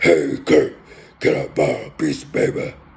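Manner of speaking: very deep, raspy voice. Imitating the classmate who sat right behind him: deep raspy Dr. Claw voice. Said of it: "real deep, raspy voice. He sounded like uh, doctor Claw".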